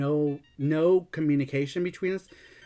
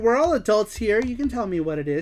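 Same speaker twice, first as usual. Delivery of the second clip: put-on super sweet old lady voice; 6 semitones higher than usual. Retelling a phone call about a complaint: imitating a super sweet old lady. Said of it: "She sounded like an old lady. She sounded super sweet".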